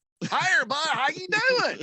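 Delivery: put-on heavy northern Alabama accent. Showing how one would show up with the accent: heavy Northern Alabama accent. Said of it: "I'd show up with it heavy".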